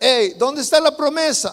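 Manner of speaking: put-on sarcastic, jeering tone. A speaker retells how people mocked the Christians, mimicking a sarcastic taunt. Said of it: "con sarcasmo les decían".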